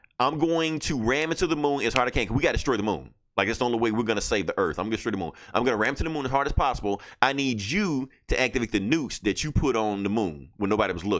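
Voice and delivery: plain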